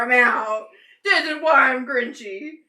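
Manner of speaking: angry, huffy delivery. Retelling how she slammed the door: imitating someone storming off. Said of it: "She, like, slammed the door".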